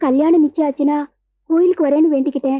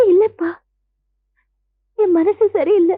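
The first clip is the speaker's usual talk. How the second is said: speaking through tears, crying; 4 semitones higher than usual. Offered saris and asked if she likes none, answering crying while talking. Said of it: "ஏன் அழற?".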